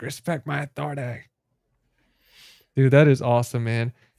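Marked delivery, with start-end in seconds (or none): 0.0-1.2 put-on cartoon character voice. Retelling a chat viewer's bit from South Park: Cartman voice. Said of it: "He he was doing a Cartman from South Park".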